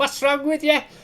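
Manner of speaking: put-on very high-pitched Liverpool Scouse accent. Retelling what she called from the house, in a Scouse accent. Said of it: "in the Scouse".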